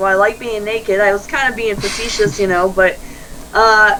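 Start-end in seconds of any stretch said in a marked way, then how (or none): none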